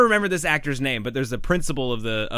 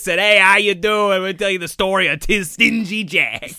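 put-on speaking with New England accent; 7 semitones higher, 6 dB louder than usual. Speaker imitates the actor playing the town mayor, new england accent. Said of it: "a real New England accent".

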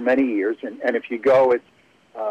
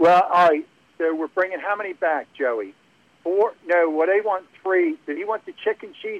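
put-on Philadelphia accent, much higher; 6 semitones higher than usual. Retelling the restaurant workers' back-and-forth about an order, in a philly accent. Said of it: "and real Philly".

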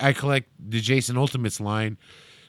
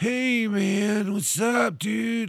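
put-on slow, high stoner hippie drawl; 7 semitones higher, 4 dB quieter than usual. Retelling what an old hippie said at a shop: imitating a stoner hippie. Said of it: "very, like, Cheech and Chongy".

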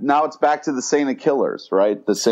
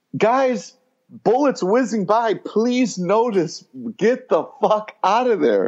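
high-pitched yelling; 9 semitones higher than usual. Retelling a reaction to a tense scene: imitating screaming at the TV. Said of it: "screaming at the T V".

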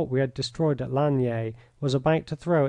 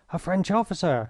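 gasping out the words; 5 semitones higher than usual. A narrator reads an astonished young man's line on meeting a French officer, gasped. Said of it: "he gasped".

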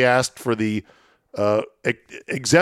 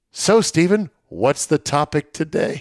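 acted, bright, cheerful motherly voice; 4 semitones higher than usual. Retelling a mother's question about the podcast topic: imitating mom's cheery tone. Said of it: "my mom says with a cheery smile".

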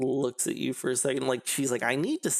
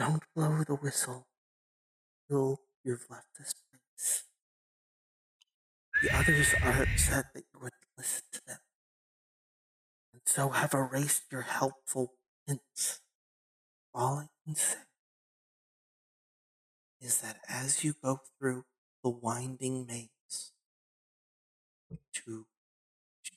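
words gurgled as if through bubbles underwater; 4 dB quieter than usual. Storyteller voicing a creature that speaks, voice like speaking underwater through bubbles. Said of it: "The words kind of sound like they're being said underwater almost".

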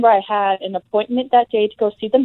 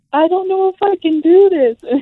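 very high, tearful crying, pleading voice, acted out; 10 semitones higher, 3 dB louder than usual. Retelling holding on to the speaker's mom during contractions, imitating her own crying. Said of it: "holding on to my mom and crying".

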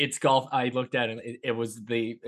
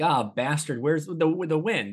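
mock yelling, much higher pitch; 5 semitones higher than usual. Recalling playing Wii golf with his dad, imitating dad yelling at the TV. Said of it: "he would be yelling at the TV".

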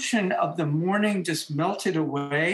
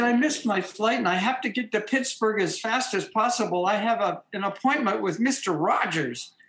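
whiny, pleading voice, close to tears; 3 semitones higher than usual. Retelling a plea to the airport desk woman after missing a flight: imitating own past whining. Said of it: "I was whining".

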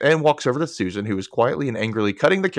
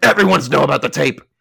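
put-on curt, snappish tone; 3 semitones higher, 7 dB louder than usual. Recounting a scene where a woman snaps back at a man, retelling a snappish retort. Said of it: "she snaps back".

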